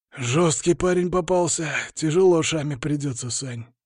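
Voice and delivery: ordinary talk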